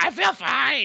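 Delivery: very high-pitched cartoon girl voice. Quoting a woman who says she feels fine after sleepwalking: Strong Bad's Teen Girl Squad voice. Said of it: "she reminded me of Strong Bad doing the Teen Girl Squad voices".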